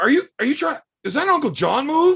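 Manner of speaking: very high, indignant, accusing, offended disbelief. Retelling a match, the speaker imitates an offended opponent. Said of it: "he's all offended".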